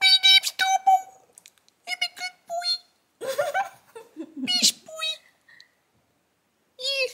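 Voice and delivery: tiny, very high, very slow toy-poodle voice. Giving the dog Domo a voice as asked: high-pitched Domo voice. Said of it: "Domo's voice would be this really high-pitched".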